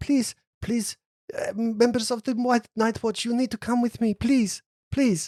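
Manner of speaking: very high, put-on elf character accent. Voicing a pleading elf who runs up to the party: elf character's accent. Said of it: "remember the actual accent that you used for that character".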